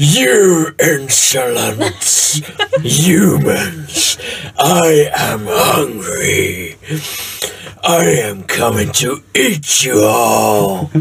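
put-on, mimicked dragon voice. In a tabletop game, a player's character addresses the humans, mimicking a dragon's voice. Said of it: "I'm trying to mimic the voice of the dragon".

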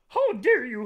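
very high, loud, squealing puppet monster voice. Riffing with a friend about looking like a Muppet, in a Grover voice. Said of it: "was Grover".

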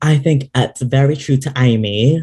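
bad, fake, put-on British accent. Commenting on a drag look, joking: terrible British accent. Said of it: "a terrible British accent".

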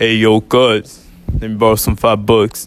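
put-on loud, big grown-man voice.

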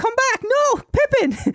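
very high, stretched-out, drawn-out screaming cry. Retelling a movie scene where the wife calls back her dog: imitating a wife screaming. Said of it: "the wife is screaming at the dog".

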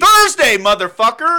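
shrill, very loud, high-pitched yelling. Answering another speaker who asked when they last went to a movie: yelling. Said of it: "Stop yelling at me".

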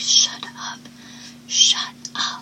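soft, desperate, pleading whisper. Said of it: "begging her just to shut up".

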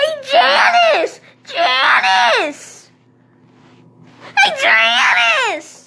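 very high, swooping, drawn-out screaming. Imitating girls calling to each other across a room, retelling their screaming. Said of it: "I hurt my throat screaming like that".

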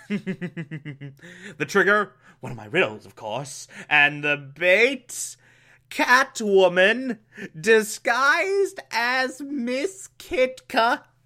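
mocking, very slow drawl, every word drawn out. Recapping the plot while mocking the Riddler: mocking Riddler impression. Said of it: "I'm mocking the Riddler at this point".

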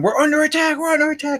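put-on very high-pitched, alarmed screaming. Retelling a prank on a sleeping kid in the field, imitating screaming. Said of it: "And we just start screaming".

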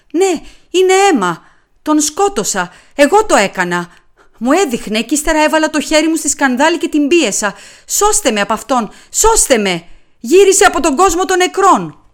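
hysterical, high-pitched shouting. A woman seeing blood on her hand confesses to a killing, shouting hysterically. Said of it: "φώναξε σε κατάσταση ιστερίας".

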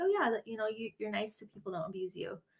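mock-casual, put-on nonchalant voice. Speaker retells what a woman told them in one session: imitating someone nonchalant. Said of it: "just so nonchalantly".

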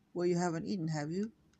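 ordinary delivery

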